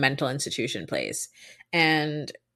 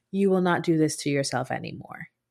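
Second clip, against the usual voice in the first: quiet, not-loud, non-shouting delivery. Retelling how he commanded her to stop, imitating a quiet, unshouted command. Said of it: "it's not a very loud voice".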